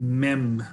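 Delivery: slow drawn-out delivery. Saying the sound again as asked: saying it slowly. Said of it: "say it slowly".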